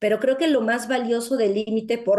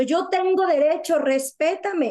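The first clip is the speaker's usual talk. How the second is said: mock child shouting, higher; 6 semitones higher than usual. Retelling how a niece refused to bathe: imitating a child shouting. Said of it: "le gritaba a su mamá diciendo".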